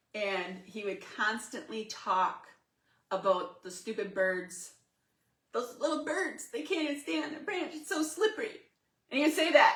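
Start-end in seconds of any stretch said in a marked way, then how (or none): 5.6-8.6 goofy put-on voice, very high and fast. Retelling how he kept talking about little animals, in a silly imitation voice. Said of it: "I don't know why I'm talking like this".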